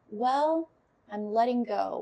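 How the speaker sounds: put-on very gentle, slow elderly woman's voice. Retelling how a woman's voice answered when asked why she lingers, gentle old lady voice. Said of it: "it sounded like an old lady".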